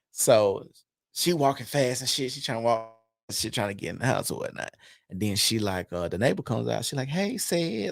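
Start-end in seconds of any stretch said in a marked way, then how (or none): 7.1-7.9 mock coy, flirtatious tone at very high pitch. Retelling how the neighbor greeted him: imitating a flirty greeting. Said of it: "like all flirty and shit".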